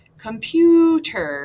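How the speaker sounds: computer with PU stretched, slow and loud. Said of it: "that middle syllable is the stressed one".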